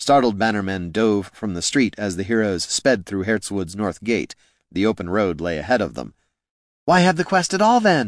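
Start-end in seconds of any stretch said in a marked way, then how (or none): 6.8-8.1 shrill, very high shout. Caitha shouts as the heroes ride out through the north gate, shouted. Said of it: "shouted Caitha".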